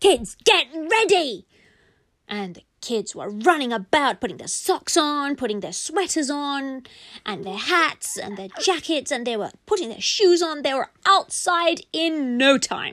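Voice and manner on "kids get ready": high, loud, yelling talking-toy voice. Telling a story where a toy yells for Mummy: toy yelling at the kids. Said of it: "the toy will yell at us".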